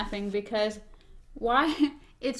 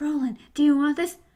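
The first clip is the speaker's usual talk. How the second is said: put-on whisper, higher; 4 semitones higher, 4 dB louder than usual. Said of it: "why are you whispering".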